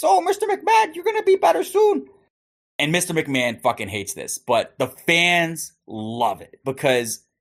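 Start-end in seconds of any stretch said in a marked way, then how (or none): 0.0-2.1 squeaky, very high sock-puppet voice. Acting out a sock puppet speaking close to someone's face, high-pitched puppet voice. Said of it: "in a high-pitched voice like this".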